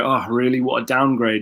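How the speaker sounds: ordinary talk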